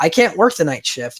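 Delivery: ordinary talk, nothing marked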